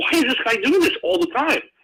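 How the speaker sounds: baffled, yelled outburst.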